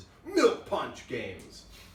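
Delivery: slow, drawn-out announcer voice. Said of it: "in my best announcer voice".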